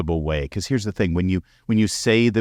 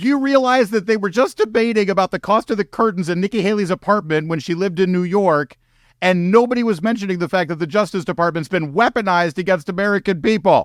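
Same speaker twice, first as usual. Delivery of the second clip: worked-up, riled-up rant, pitched way up; 12 semitones higher, 4 dB louder than usual. Reacting to a televised debate, a speaker gets riled up. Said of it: "I'm getting a little riled up".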